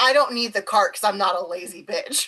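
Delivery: ordinary delivery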